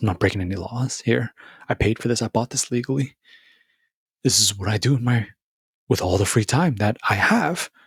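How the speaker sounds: put-on deadpan, straight-faced delivery. Acting out what a hypothetical guy would tell him, imitating a deadpan guy. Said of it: "straight face and everything".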